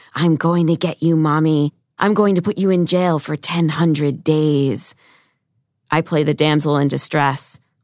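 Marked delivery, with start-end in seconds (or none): 0.2-5.0 loud whisper, shout-whispering. A mother retelling what her daughter says while hunting her, shout-whispering. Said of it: "shout whispering".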